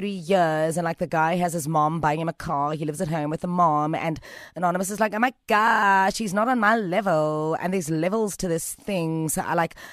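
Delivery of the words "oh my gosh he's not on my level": slow, bratty, spoiled, entitled drawl. Retelling what a listener said about her boyfriend: imitating a bratty woman. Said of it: "you're making her sound like such a brat".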